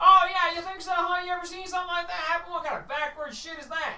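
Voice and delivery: very high, loud, mocking villager voice.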